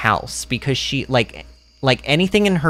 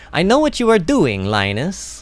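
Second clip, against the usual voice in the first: terrible put-on Italian accent with swooping pitch; 3 semitones higher than usual. Voicing a game character addressing Linus, in a bad Italian accent. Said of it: "Terrible. I'm terrible at it".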